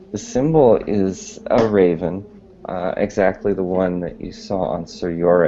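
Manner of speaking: plain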